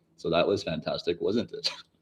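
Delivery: very quiet, flat, level monotone, barely audible. Show listeners who may never have heard it your monotone Verson impression. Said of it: "That was my Verson impression".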